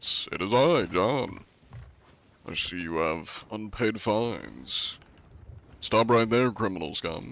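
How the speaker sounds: fancy, very posh put-on voice. Voicing the character John, the speaker uses a fancy posh voice. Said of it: "posh, posh, posh voice".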